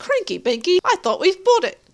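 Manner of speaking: put-on high, loud British or Australian accent. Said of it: "an Australian My Fair Lady".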